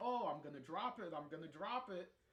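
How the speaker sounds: put-on playful, mischievous, goading, teasing voice. Retelling how someone threatened to drop a camcorder: imitating Corey teasing.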